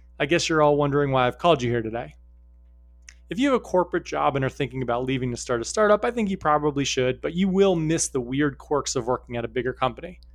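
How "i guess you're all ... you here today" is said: ordinary talk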